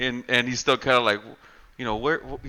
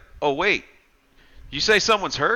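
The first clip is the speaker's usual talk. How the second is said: acted, overplayed show of concern, pitched up; 6 semitones higher than usual. Retelling a horror movie scene: imitating someone really playing it up. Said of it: "really playing it up".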